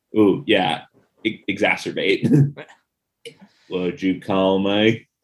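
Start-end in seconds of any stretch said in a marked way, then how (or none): 3.6-4.9 very low, slow western drawl. Joking in conversation, slip into the voice you always do, a John Wayne voice. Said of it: "I always do that John Wayne voice".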